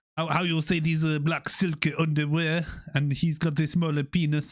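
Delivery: put-on French accent on English. Attempting a French accent while telling a story, French accent. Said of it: "sorry I'm trying to do my French accent".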